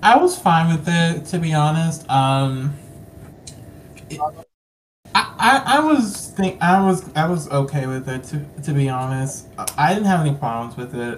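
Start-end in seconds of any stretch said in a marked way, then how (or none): 5.1-11.2 stuttering, repeating and tripping over word starts. Answering whether joining the radio special at the last minute was okay: stuttering. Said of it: "You're stuttering".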